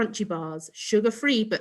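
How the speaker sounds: ordinary delivery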